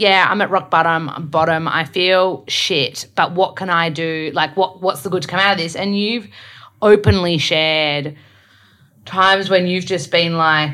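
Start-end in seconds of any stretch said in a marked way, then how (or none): none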